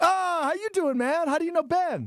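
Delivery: eccentric, quirky, very high-pitched voice. Acting out a planned greeting to someone in line at the bar: eccentric acting-out of a greeting. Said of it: "Just like that".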